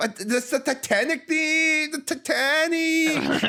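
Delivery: put-on Valley Girl style mixed with Mexican accent. Retelling what teenagers in a theater said: imitating Valley Girl slash Mexican accent. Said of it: "the way they were pronouncing Titanic".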